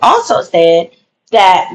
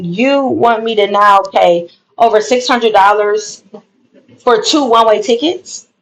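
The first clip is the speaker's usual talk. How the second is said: plain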